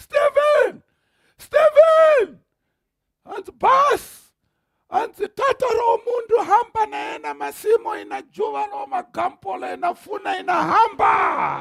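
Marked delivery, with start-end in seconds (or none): 0.0-2.4 mock shouting, much higher and louder. Retelling how a man started shouting as he opened the gate, imitating someone shouting. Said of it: "he started shouting".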